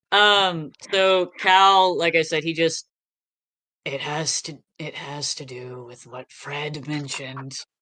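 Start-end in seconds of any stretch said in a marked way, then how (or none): 3.8-7.5 soft, hushed half-whisper with barely any voice. Speaking as Cal, passing on a clue to the group: half-whispering. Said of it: "Why are you whispering?".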